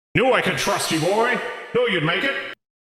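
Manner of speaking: voice through a small speaker. Voicing a brain in a jar who speaks through a little speaker: voice coming over a radio. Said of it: "it's kind of like comes over the radio".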